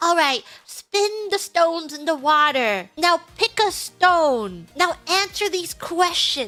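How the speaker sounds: slow, stretched-out speech. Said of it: "they do it in such a slow way".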